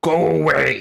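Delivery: very loud, gruff, barking shout. Voicing someone behind a door turning visitors away: gruff voice. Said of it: "a gruff".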